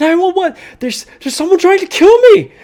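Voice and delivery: very high, loud, shrill, terrified screaming. Voicing a man calling for help while under fire, screaming in fear. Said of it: "he's screaming from inside".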